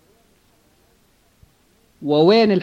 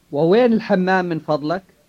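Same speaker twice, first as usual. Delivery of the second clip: plain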